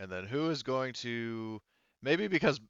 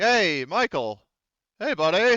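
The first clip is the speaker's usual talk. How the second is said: very loud, drawn-out shout; 9 semitones higher, 11 dB louder than usual. Playing a character calling out to a familiar face: shouting out to someone. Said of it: "Gorm just basically kinda shouts out to him".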